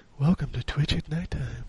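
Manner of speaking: hushed, soft, gentle voice. Speaker suggests how a streamer should have introduced the twitch at nighttime name, in a soft voice. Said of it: "said it in like a soft voice".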